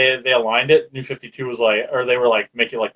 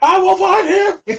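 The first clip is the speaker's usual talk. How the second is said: loud, very high shouted yell; 6 dB louder than usual. Quoting a movie line at the others: imitating a yell. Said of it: "Why do people keep yelling at me?".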